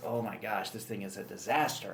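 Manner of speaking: ordinary delivery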